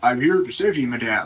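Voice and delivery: voice dropped down low. In a role-play, voicing the other player's character as instructed: deeper voice. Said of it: "and in a deeper voice".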